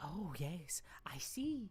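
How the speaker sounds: tiny, soft fairy voice, very slow and drawn out. Voicing a tiny fairy who asks the wizard for help: tiny fairy voice. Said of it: "And she says".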